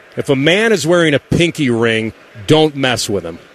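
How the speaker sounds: ordinary talk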